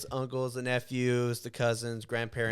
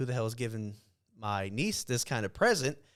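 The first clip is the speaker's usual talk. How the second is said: normal talking voice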